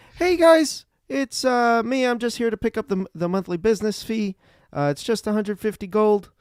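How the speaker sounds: a little squeaky, high little character voice. A returning character knocks on the door and greets the group, squeaky voice. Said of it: "He's a little squeaky".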